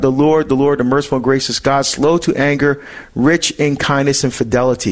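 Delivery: normal talking voice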